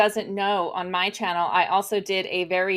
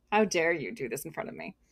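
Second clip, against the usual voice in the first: mock condescending alpaca voice, quieter; 3 semitones lower, 8 dB quieter than usual. Voicing an alpaca that gave Lynn the stink eye: imitating a haughty alpaca. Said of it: "He was haughty".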